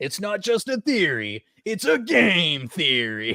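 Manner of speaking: stretched out very slowly, pitched high. Doing one more impression, quoting a catchphrase: Matt Pat impression. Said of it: "I have to do one more 'cause I love Matt Pat".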